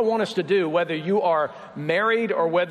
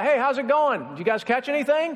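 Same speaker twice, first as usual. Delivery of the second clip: high, carrying, friendly shout. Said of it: "somebody from the shore yells out".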